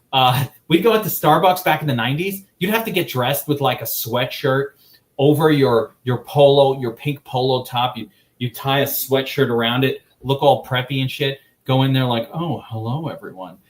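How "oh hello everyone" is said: soft, put-on, hoity-toity, posh old-timey voice. Recalling nineties Starbucks visits, the speaker mimics preppy customers: put-on posh old-timey voice. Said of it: "you start talking like you know, like from the oldie timey people".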